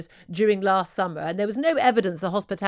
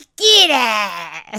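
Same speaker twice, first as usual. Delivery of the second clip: put-on pub landlady voice, louder; 2 semitones higher, 8 dB louder than usual. Trying the line again when asked: Peggy Mitchell voice. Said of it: "you've got to do it with more Peggy Mitchell".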